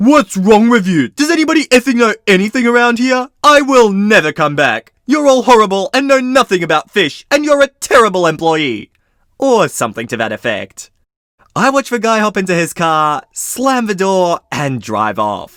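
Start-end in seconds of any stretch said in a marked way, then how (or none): 0.0-8.9 play-acted irate, loud, shrill, furious yelling and cursing. Retelling a customer cursing out an employee: imitating a customer screaming. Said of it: "find the customer screaming at John and cursing him out".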